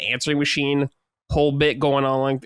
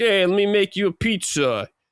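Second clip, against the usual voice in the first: creepy, pitched-up put-on character voice; 6 semitones higher than usual. Describing a weird game character, imitating creepy pizza baker voice. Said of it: "how I'm voice acting is, like, that's how they sound".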